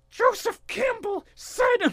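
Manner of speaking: very high, slow, deliberate drawn-out yell. Picturing George Lucas smashing a keyboard with a bat: imagining George Lucas yelling. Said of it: "just yelling".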